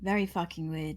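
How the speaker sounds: censorious, judging, disapproving tone. Reacting in character to being handed a letter: judgmental tone. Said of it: "Why are you saying it like you're judging me?".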